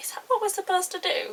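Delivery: soft, high-pitched, hushed half-whisper. Retelling a first kiss and what was asked afterwards: retelling a half-whisper. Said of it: "I whispered to him afterwards".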